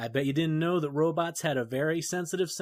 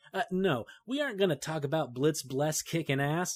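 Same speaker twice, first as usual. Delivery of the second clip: ordinary talk, nothing marked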